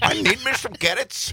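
put-on very high old grandmother lady voice. Bringing back yesterday's Canada babushka lady bit, babushka lady voice. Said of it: "babushka lady".

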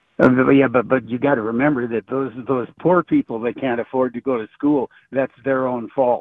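ordinary delivery

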